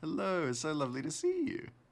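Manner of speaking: voice shooting up very high and swooping. Saying hello to Cap, high-pitched voice. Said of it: "my voice went so high pitched there".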